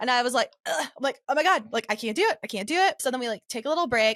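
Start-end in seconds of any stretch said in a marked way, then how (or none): 1.3-3.0 panicked, distressed, acted-out panicky voice. Recounting a failed attempt underwater, the speaker acts out retold panicked words. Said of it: "like a panic attack underneath the water".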